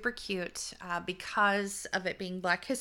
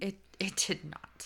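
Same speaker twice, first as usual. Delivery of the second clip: put-on British accent, quieter; 5 dB quieter than usual. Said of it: "You went British there".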